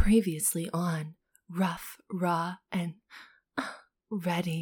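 soft, sultry, seductive, sexy narrator-style voice. Podcast co-host takes a turn at the book recap intro, in a sexy voice. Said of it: "I never get to do a sexy voice".

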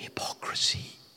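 hushed, very quiet whisper. Speaker doesn't want to say the word, so whispers it: whispered word. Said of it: "I'll whisper it".

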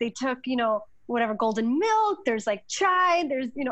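mock exasperated rant, high-pitched and fed up.

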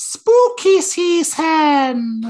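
very high, loud put-on American accent, "season" stretched. Saying how Americans call this time of year: imitating an American accent. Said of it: "as the Americans like to call it, ... Literally in that voice".

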